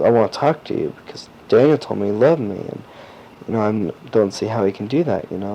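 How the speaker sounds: ordinary talk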